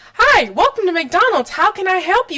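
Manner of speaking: bright, friendly clerk voice. Recalling mcdonald's cashiers greeting little kids at the counter, imitating a smiling cashier. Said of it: "with that big old smile".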